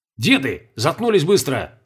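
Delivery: curt, sharp, insistent, demanding tone. A character interrupts two old men who are reminiscing: demanding. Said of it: "потребовал Колобков".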